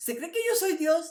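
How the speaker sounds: high, loud shrieking yell. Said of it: "y chilla y grita y dice".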